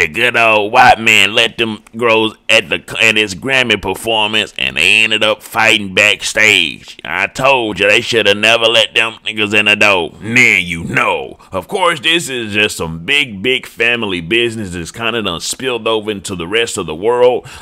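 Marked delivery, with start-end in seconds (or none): 0.0-10.1 put-on grumpy old cartoon man voice. Recounting a backstage fight after a Grammy performance, in Uncle Ruckus voice. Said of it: "in my best impersonation of Uncle Ruckus' voice".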